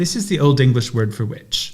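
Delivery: plain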